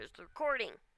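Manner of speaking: ordinary talk, nothing marked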